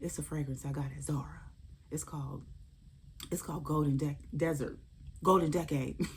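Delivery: soft whisper under the breath. Retelling her reply to a TSA agent who whispered to her, whispering back. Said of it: "I'm whispering back".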